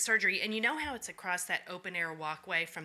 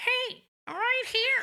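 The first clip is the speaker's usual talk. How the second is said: very high, slow talking-mask voice; 6 dB louder than usual. Recapping a scene, voicing the ether mask tempting Claire: voicing the ether mask. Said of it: "the ether mask being like".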